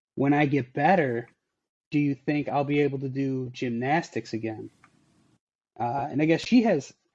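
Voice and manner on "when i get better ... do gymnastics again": usual speaking voice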